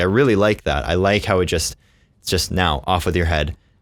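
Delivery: ordinary delivery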